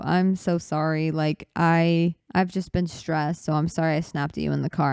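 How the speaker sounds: usual speaking voice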